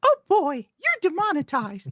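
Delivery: squeaky, very high, bouncy voice. After praise for a dog impression, the speaker shows another: Mickey Mouse impression. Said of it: "I also do Mickey Mouse".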